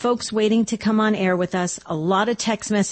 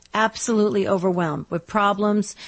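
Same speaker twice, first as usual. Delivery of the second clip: usual speaking voice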